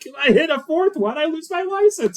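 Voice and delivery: mock, very high, frantic, freaked-out panic. Retelling a driver's reaction from a book: acting freaked out. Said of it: "he's super freaked out".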